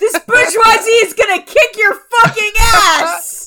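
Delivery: very high, all-out scream, "ass" drawn out. A character answers an opponent's taunt: screaming. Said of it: "I'm screaming".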